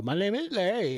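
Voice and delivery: put-on Indian accent. Imagining an Indian man introducing himself with an American name, Indian accent. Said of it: "an Indian guy who go".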